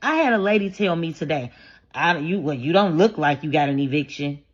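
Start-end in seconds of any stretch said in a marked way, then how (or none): 1.9-4.4 put-on suspicious tone, lower. Retelling what a lady told her today, imitating a suspicious tone. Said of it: "She said it like she was suspicious".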